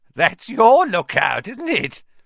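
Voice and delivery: gleeful voice cracking, very high-pitched and loud. Filch answers Neville and Harry, his voice cracking with glee. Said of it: "his voice cracking with glee".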